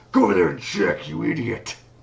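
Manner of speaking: big booming voice with swooping pitch. Narrating a game, voicing a character ordering another to go check: booming voice. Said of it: "you just hear a booming voice".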